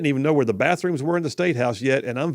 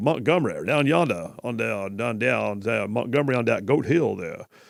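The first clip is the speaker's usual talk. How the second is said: lower, put-on cartoon rooster voice; 4 semitones lower than usual. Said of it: "that was fog".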